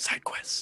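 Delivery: eager, excited, hushed, breathy whisper. A player's character looks over to a companion: excited whisper. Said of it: "just whispers".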